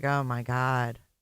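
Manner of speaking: put-on anxious, on-edge nervous outburst. Retelling how Trisha reacts, imitating Trisha sounding nervous. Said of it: "Trisha's even nervous".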